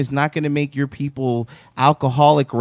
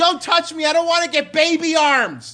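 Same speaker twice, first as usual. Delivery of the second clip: very high scream. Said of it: "he screams".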